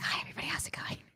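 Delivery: very quiet, barely voiced asmr whisper. A host with a new boom arm jokes about doing ASMR: ASMR whisper. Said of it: "I kind of feel like whispering".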